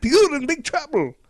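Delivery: loud, very high yell in a bad Scottish accent. Retelling how Jock yells from a passing truck; Jock's Scottish accent. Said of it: "Good Scottish?".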